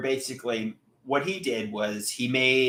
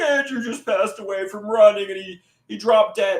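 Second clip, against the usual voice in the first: dramatic, high, tearful weeping voice; 9 semitones higher, 4 dB louder than usual. Imagining his mom's dramatic voicemail after his death, imitating mom crying. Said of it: "She's crying".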